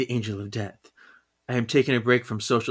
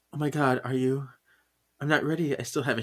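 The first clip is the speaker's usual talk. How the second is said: acted-out tearful, nervous, pleading voice; 3 semitones higher, 3 dB quieter than usual. Retelling a comic scene where Faith faces Death: acting out a tearful, nervous plea. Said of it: "in tears, and she's so nervous".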